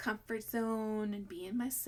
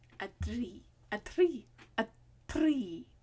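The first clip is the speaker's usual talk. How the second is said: loud put-on Indian accent, "three" with th as t; 5 dB louder than usual. Talking to an audience about accents, in an Indian accent. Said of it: "Indian accents too".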